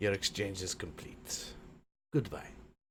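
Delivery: quiet, glum, joyless, unhappy voice. Voicing a character who finishes a trade and says goodbye, sounding unhappy. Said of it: "you don't sound very happy".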